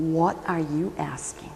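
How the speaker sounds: unbending, very firm, stern tone. Retelling how one answers a request, acting out a very firm tone. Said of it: "very firmly his tone of voice says".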